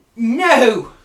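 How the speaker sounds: panicked outburst. Voicing a character who finds her brother frozen: freaking out. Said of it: "you can hear her freaking out".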